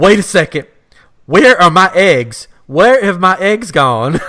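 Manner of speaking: woman's loud, high, panicked outburst. Retelling a woman freaking out about her biscuits; mock-panicked, freaking out. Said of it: "now she's freaking out about her biscuits".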